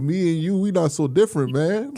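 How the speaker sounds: put-on drunken speech. Imitating a stranger in a bar who puts an arm around you: imitating a drunk person. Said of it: "somebody put their arm around you in the bar and be like".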